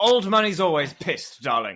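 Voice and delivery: put-on drunk, tipsy, posh upper-class voice. In a comedy scene, answering a remark about how they sound, in a drunk posh voice. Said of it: "You sound pissed and posh".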